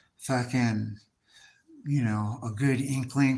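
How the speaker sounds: normal talking voice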